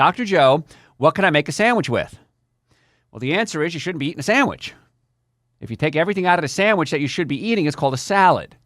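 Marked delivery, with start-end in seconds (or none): none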